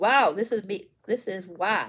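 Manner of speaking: plain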